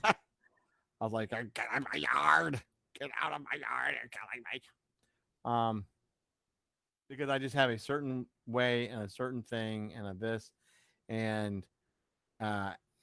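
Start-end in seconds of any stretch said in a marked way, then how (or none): 1.3-5.8 mock driven-crazy, exasperated, rough-edged outburst. Speaker recalls a friend helping with the pirate ship, retelling being driven crazy. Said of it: "and it just drove me crazy".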